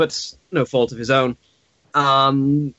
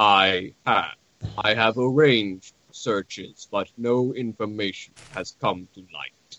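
low, dry, dour, droll deadpan delivery; 5 semitones lower, 5 dB quieter than usual. Voicing Izek answering the group's questions: dour, droll voice. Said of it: "The two dour, droll motherfuckers".

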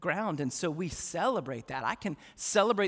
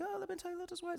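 very high, put-on British TV lady voice; 14 semitones higher, 10 dB quieter than usual. Imitating how a British author sounds when reading her book: put-on British accent. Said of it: "She's British".

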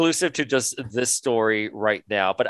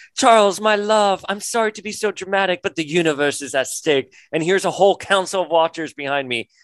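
high-pitched, laid-on flowery manner of speaking; 6 semitones higher than usual. Retelling a comic scene, imitating Lilandra's flowery speech. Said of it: "Lilandra shows up with her floral language being like".

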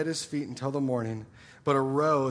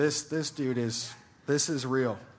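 ordinary talk

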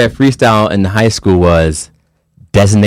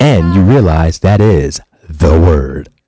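deliberately slowed-down delivery; 5 semitones lower than usual. Repeating the show's plug after being told it was said too fast, with slow delivery. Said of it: "I'll you go slow to it down one more time".

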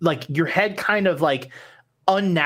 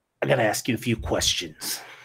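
demon voice, lower; 6 semitones lower, 3 dB quieter than usual. Voicing a seven-foot demon questioning a player: demon voice. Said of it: "He looks at you and goes".

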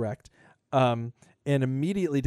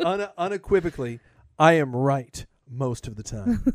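put-on authoritative, confident tone; 3 dB louder than usual. Joking after giving out incorrect information: mock authoritative tone. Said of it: "You see how I said that so authoritatively?".

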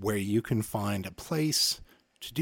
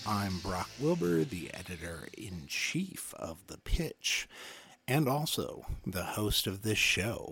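smooth, mellow jazz radio host delivery; 4 dB quieter than usual. The host opening the podcast and welcoming listeners in a smooth jazz voice. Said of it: "doing a smooth jazz voice".

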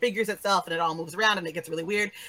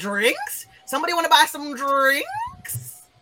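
high, swooping vendor call, "drinks" stretched out; 8 semitones higher than usual. Voicing a cart seller calling out behind the party: Loop Daddy voice. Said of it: "hear a familiar voice behind them".

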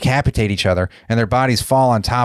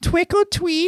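tiny, very high, chirping alien creature voice. Retelling a movie scene, the alien repeats it to the killer; tiny high-pitched alien voice. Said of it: "in a tiny, high-pitched voice".

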